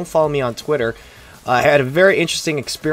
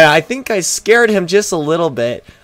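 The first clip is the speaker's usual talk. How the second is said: ordinary talk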